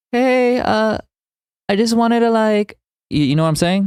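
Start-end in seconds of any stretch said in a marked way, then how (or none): 0.1-2.7 very slow, high, drawn-out fake girly voice. Mocking the guide narrator's voice for chat: imitating a man faking a girl's voice. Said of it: "it sounds like a dude trying to make a girl's voice".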